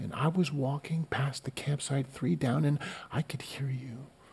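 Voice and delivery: very soft, hushed, earnest, dead-serious whisper. Retelling what a man said to the speaker's group, imitating his whisper. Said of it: "He's whispering like he's sitting beside you".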